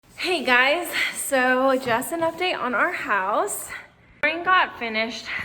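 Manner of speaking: out of breath. Giving viewers a house update right after moving furniture upstairs, panting. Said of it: "Sorry, I'm panting".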